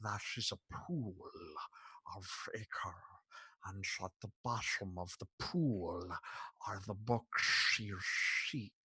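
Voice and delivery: low, hushed, rough gravelly voice. Narrator voicing a creature that speaks to the listeners, Sean Connery voice. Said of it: "Sean Connery".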